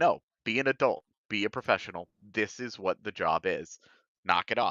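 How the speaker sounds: ordinary talk, nothing marked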